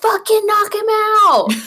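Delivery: acted, very high, shrill screaming. Recalling getting closer to the ring, acting out own past screaming. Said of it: "I was, like, screaming".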